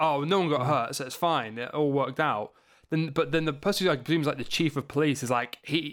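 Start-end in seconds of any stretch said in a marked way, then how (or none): none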